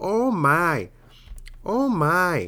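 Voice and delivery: put-on high, very slow elderly woman voice. Showing the audience the speaker's old person voice, old lady voice. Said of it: "My old person voice is like an old lady and she's like".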